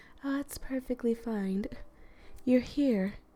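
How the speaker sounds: mellow, high, smooth voice. Voicing the character Ari after almost forgetting her voice: smooth, mellow Ari voice. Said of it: "a smooth, mellow-toned voice, like".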